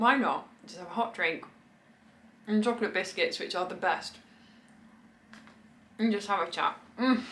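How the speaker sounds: speaking with a full mouth while chewing. Chatting to viewers over a hot drink and biscuits, talking with mouth full. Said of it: "A chat with my mouth full, sorry".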